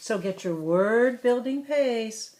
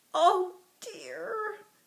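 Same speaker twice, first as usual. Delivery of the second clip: very high, weak, feeble small voice; 10 semitones higher, 3 dB quieter than usual. Narrator reading a story, voicing Emil Emu's line: feeble little voice. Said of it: "said Emil Emu in a feeble voice, little voice".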